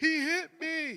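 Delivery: mock sobbing, very high and loud. Retelling what a girl said after she got hit, imitating someone crying. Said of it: "she's crying".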